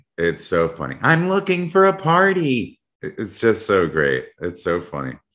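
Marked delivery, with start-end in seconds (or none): 1.0-2.8 put-on very high, creepy, spooky little kid voice. Praising someone's funny bit, the speaker quotes it in a Chucky voice. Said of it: "Brad's child's Chucky voice".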